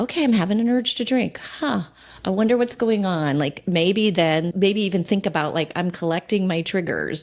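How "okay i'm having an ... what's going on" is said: relaxed, unpanicked, calm, lightly raised tone. Showing a calm, aware response to an urge to drink: calm, not panicking. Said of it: "it's aware".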